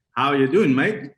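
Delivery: put-on Australian accent. Speaker from the Netherlands, asked for their best Australian accent, does the greeting. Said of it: "give us your best Australian accent".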